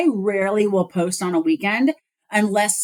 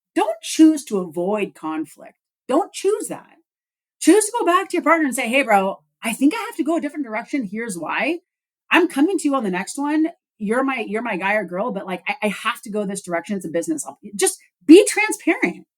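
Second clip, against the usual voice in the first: worked-up, impassioned, heated, fired-up delivery; 2 semitones higher than usual. Giving advice to listeners about dealing with a partner, heated and fired up. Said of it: "That's where I'm getting all heated now. Sorry".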